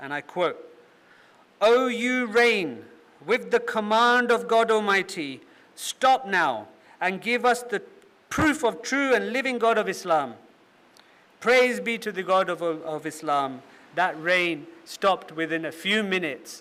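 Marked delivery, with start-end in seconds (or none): 1.6-13.6 mock commanding, loud, confident, awe-filled, wondrous proclaiming. Quote Maulana Rahmat Ali Sahib addressing the rain, imitating a confident, loud, wondrous voice. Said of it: "in a confident and loud, wondrous voice".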